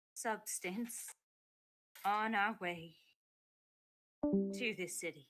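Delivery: very quiet soft voice. Answering a question while keeping the voice down: speaking very quietly. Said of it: "I am being real quiet".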